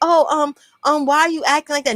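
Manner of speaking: faux-innocent, hesitant, wounded victim tone. Retelling a partner's reply in a fight: imitating someone playing the victim. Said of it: "Now he wanna play victim".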